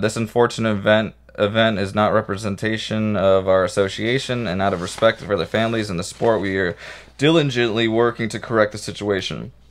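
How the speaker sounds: ordinary talk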